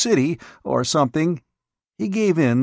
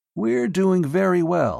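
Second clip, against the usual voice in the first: calming, soothing, reassuring tone; 4 semitones higher than usual. A doctor speaks to the man he is questioning: soothingly. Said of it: "The doctor said soothingly".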